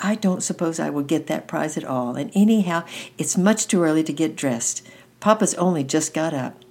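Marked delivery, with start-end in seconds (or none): none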